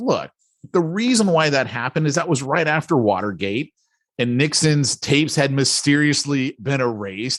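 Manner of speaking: ordinary delivery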